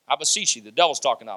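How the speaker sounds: ordinary delivery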